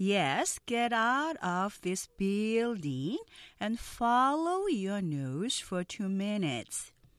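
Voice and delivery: each word read out very slowly and carefully. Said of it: "느린 속도 발음 듣고 천천히 따라해".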